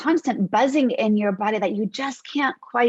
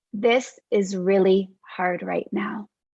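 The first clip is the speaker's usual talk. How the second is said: gentle, kind tone, without judgment; 3 semitones lower than usual. Speaker models a self-compassionate phrase for listeners, in a kind tone. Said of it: "Just really with a tone of kindness".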